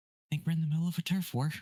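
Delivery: acted stage half-whisper. Voicing a character holding a hatch shut, half-whispering in character. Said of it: "just gonna whisper".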